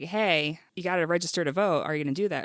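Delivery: ordinary talk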